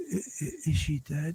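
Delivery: very quiet, real low, hushed voice. Retelling what a woman asked about the person behind the door, really low. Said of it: "a real low voice".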